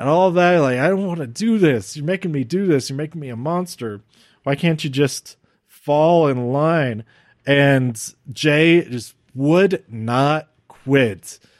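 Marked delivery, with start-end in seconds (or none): 0.8-7.0 crying, anguished, tearful, pleading outburst. Retelling a wrestling match scene: imitating Roman Reigns tearing up. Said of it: "when Roman was tearing up".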